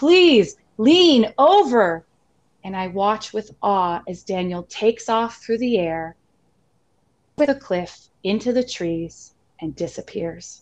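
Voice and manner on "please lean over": hoarse, raspy, raised, high scream, worn voice. Telling of running downhill with Daniel toward a cliff, retelling a raspy scream. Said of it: "screaming through my raspy voice".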